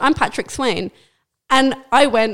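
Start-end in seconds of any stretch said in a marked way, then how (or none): none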